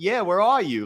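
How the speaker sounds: put-on New Jersey accent. Retelling a prank call, voicing the woman who answered: New Jersey accent. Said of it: "Like this New Jersey style accent".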